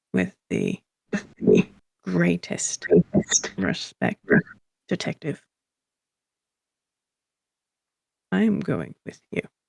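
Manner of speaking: voice that sounds painful to use. Voicing a character who insists to a detective on coming along: voice that hurts to use. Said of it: "in a voice that actually sounds like it really hurts to use".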